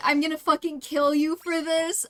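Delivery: unsettling, menacing, earnestly threatening tone. Retelling a game character's line: imitating Sylvain's unsettling threat. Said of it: "Sylvain being like".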